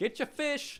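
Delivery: shrill, very high, loud hawker's yell. Describing a busy market as game master, vendors yelling. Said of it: "people are yelling".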